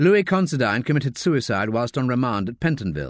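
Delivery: plain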